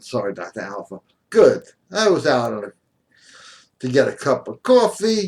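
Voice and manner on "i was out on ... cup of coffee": slow, unhurried Brooklyn accent. Reading a passage aloud as announced, speaker uses a Brooklyn accent. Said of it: "I've got to read this in a Brooklyn accent".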